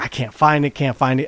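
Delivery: plain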